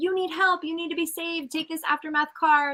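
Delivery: high, hard-pushing, insistent delivery. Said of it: "go at them hard".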